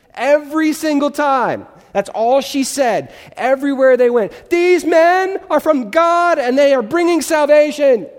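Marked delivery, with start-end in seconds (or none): 4.5-8.0 high, shrieking, top-of-the-lungs screaming. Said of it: "scream at the top of her lungs".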